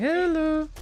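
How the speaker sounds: put-on very high, eerie, creepy little-girl voice. Retelling a creepy game moment, imitating a creepy little girl. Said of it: "sounded like there was a creepy little girl".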